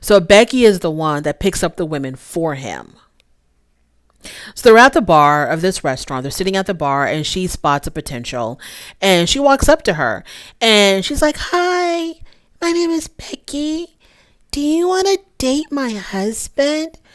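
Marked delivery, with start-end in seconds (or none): 11.4-16.9 put-on timid little girl voice, very high and soft. Retelling how Becky approached a woman at a bar, in a mock-shy little girl voice. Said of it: "in this really shy little girl demeanor".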